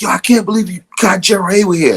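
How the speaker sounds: acted-out, very high, starstruck shrieking and gushing. Telling a story, quoting a guy who came out screaming, retelling a guy screaming. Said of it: "he's screaming".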